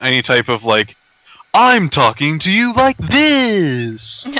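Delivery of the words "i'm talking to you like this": radio announcer voice, swooping, slow, this drawn out. Describing voices you can't take seriously, demonstrating a radio announcer voice. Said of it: "The the radio announcer".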